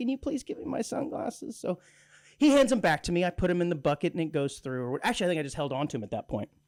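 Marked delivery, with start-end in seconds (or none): 0.0-1.6 mock sheepish, soft and hushed tone. Retelling a moment at airport security after a TSA officer's joke, retelling a sheepish ask. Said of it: "I kind of sheepishly".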